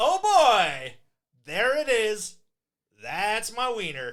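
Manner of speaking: very loud, high-pitched holler. Act out a man in a brothel, imitating someone shouting through walls. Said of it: "like he's just shouting through the walls".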